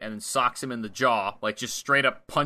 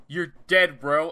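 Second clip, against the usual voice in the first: put-on wrestler-style screamed shout; 4 semitones higher, 4 dB louder than usual. Narrating a match, acting out what a fighter screams: retelling a scream. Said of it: "And then he screams".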